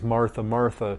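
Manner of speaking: ordinary talk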